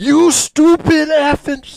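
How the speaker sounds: put-on very high, loud angry yell. Retelling a man going off at a car's automated system: imitating someone yelling angrily. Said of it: "Just yelling".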